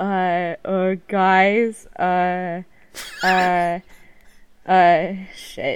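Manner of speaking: very slow, hesitant, filled with uh sounds. Doing an impression of Matt after being asked to: Matt impression. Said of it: "You do your best Matt impression".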